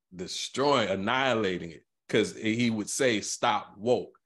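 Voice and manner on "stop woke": ordinary delivery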